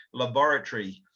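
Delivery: laboratory with the second syllable stressed. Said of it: "we tend to emphasise the second syllable".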